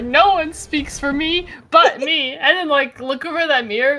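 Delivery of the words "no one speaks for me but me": normal talking voice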